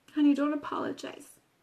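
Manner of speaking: ordinary talk, nothing marked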